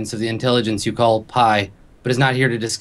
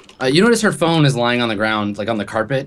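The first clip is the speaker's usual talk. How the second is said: ordinary talk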